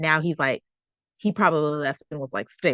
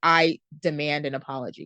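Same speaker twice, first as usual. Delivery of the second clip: normal talking voice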